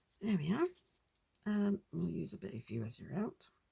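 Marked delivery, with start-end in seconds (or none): 1.4-3.4 quiet muttering with blurred, indistinct words. Talking to YouTube viewers, mumbling. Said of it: "Sorry, mumbling, mumbling".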